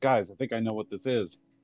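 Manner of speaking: eager, thrilled, very excited character voice. Voicing a character who recognizes an egg: excited character voice. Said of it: "he gets real excited".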